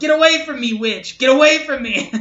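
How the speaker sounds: high, loud, carrying yell. Retelling a man yelling at his partner on the street, retelling a yell. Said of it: "And he yelled".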